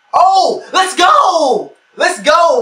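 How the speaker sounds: very slow, high, loud excited cheer with voice cracking. Reacting live as a tight end is still on the board, voice cracking. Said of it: "My voice cracked there".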